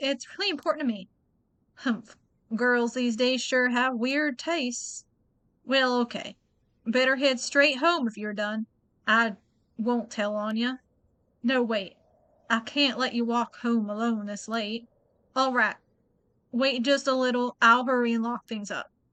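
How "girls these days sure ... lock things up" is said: put-on Southern accent. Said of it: "really hard doing the Southern accent with him".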